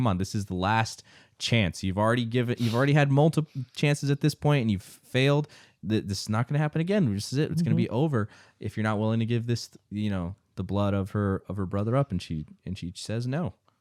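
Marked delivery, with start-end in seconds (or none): none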